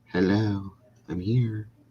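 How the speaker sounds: mousy little voice.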